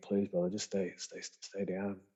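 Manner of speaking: mock urgent, desperate, repeated pleading. Retelling pleading with an injured man on a platform: retelling own begging. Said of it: "just begging".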